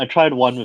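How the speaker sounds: plain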